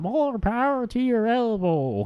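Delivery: slow, high-pitched, attempted American accent, off the mark. Admitting they can't do it, a failed attempt at an american accent. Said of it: "That wasn't an American accent. There was my attempt at it".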